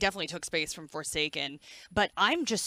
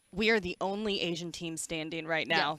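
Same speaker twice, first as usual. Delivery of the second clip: ordinary talk, nothing marked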